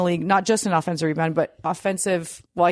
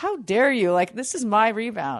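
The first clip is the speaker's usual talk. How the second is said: put-on annoyed voice, higher pitched; 4 semitones higher than usual. Imitating Donovan annoyed on a jump ball: imitating Donovan annoyed. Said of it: "he's, like, annoyed, like".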